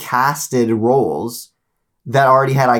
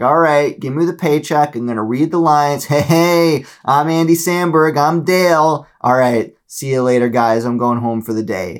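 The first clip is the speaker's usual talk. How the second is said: careless, phoned-in, couldn't-care-less read; 2 semitones higher than usual. Mocking celebrities walking into the voice studio for a paycheck: imitating a careless line reading. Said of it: "walking into the studio being like".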